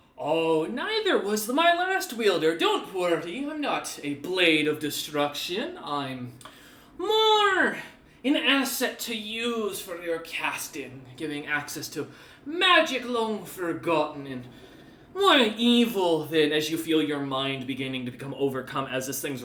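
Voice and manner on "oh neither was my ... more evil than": slow, swooping enchanted talking sword voice. Voicing a magic blade answering its new wielder: voicing a magic sword. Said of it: "You hear the voice once more and go".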